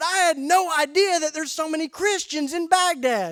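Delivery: high, loud, slightly fast excited blurt. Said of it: "I'm talking a little fast without thinking".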